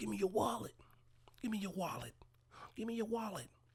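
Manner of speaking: pissed-off, angry, very high-pitched voice. Retelling a movie scene where a mugger demands a wallet: imitating an angry mugger. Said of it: "this pissed off mugger".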